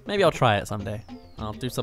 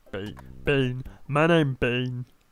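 put-on comic mumbling voice. Reading a game character's line, doing a Mister Bean voice. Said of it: "haven't got the Mister Bean, Bean voice".

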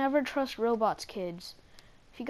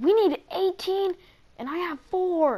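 playful fake anger, jokingly fed-up, raised and high; 6 semitones higher, 7 dB louder than usual. A streamer playing a game, mock mad. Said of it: "I'm so mad right now".

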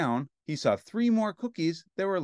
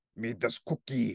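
ordinary delivery

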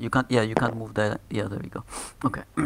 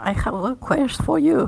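put-on very high, loud, drawn-out old man voice; 14 semitones higher, 7 dB louder than usual. Voicing an old man who offers the players a quest: old man voice. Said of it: "the old man says".

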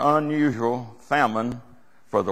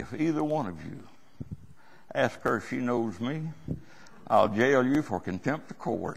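put-on quiet menace, much quieter; 7 dB quieter than usual. Quoting a man threatening jail for contempt of court; retelling a quiet, menacing threat. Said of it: "he said with menace".

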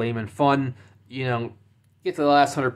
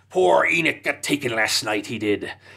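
put-on pirate-like voice. Imitating how the book's trolls talk: imitating pirate-like troll voice. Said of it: "they all sound like pirates".

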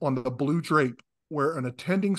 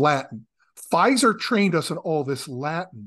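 plain

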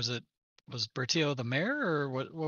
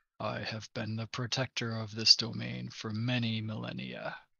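dropped, deeper dragon creature voice; 3 semitones lower than usual. Narrating a scene where another voice is heard, in a deeper voice. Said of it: "you hear another deeper voice".

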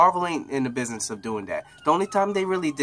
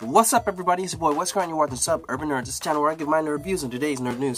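rapid-fire, rattled-off fast delivery; 2 semitones higher than usual. Host opening his nerd reviews and news channel, talking fast. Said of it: "if I talk so fast".

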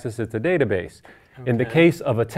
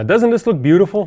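high-pitched, sarcastic, mocking delivery; 5 semitones higher, 3 dB louder than usual. Opening the next stage of the code, sarcastic. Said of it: "I was being totally sarcastic".

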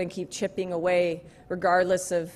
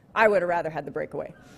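deadpan, flat delivery at a faster pace. Speaker retelling what Sidney Crosby said to him, Sidney Crosby's deadpan reply. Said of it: "he just looked at me deadpan and he said".

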